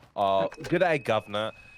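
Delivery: bad English accent drifting toward Australian. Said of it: "you sounded a little more Australian".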